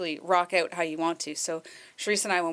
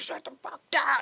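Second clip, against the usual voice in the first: put-on mad, angry old gentleman voice, cussing; 9 semitones higher than usual. Retelling how an older man at a concert cursed out a young man: imitating an old man cursing. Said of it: "cursing this guy out".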